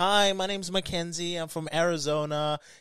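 put-on high American accent. Retelling how a fighter first spoke: imitating Mackenzie Dern's early accent. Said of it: "a compilation of her accent".

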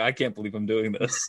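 put-on tearful voice. Retelling mom shaving the speaker's head: imitating mom crying. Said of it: "she just started to, like, cry".

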